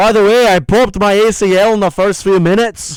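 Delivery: loud, boastful voice. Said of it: "He sounds like Paddy".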